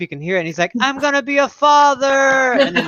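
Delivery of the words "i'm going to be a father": very high, loud, stretched-out yell. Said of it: "yelling at this boat".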